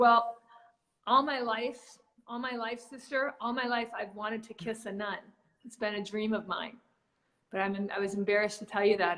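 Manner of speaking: ordinary talk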